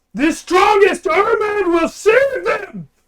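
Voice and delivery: shouting character voice. Voicing a character turning back to address everyone: character yelling to everyone. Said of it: "yells to everyone".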